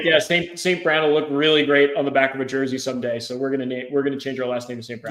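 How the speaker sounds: ordinary talk, nothing marked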